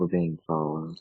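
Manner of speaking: soft, quiet, hushed half-whisper. Warning another player's character in a scene: quiet half-whisper. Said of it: "I'm gonna quietly whisper to Red".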